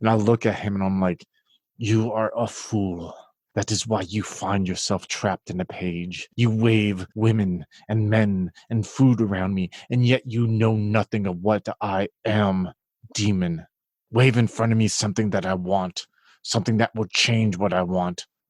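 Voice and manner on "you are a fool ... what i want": firm, low voice, slower, not screaming. Playing their character, confronting the demon Hagelas face to face, firm and low. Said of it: "I keep my voice very like firm and low".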